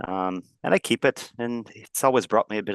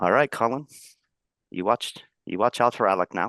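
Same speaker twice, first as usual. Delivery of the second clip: quiet muttering under breath. A narrator voices a character stepping away from the group, muttered under breath. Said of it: "kind of under his breath say".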